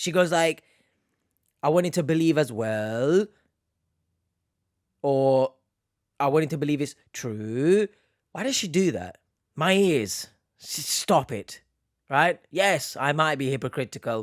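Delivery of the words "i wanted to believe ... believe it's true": line endings rise, rising on well and true. Mimicking how a woman ends her sentences, imitating rising uptalk. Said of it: "the end of her like sentences, it goes up".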